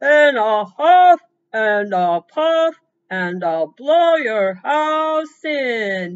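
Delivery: booming, very loud villain voice, "in" drawn out. Telling a story about little pigs and a wolf, the narrator does the Big Bad Wolf voice. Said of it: "remember your wolf voice".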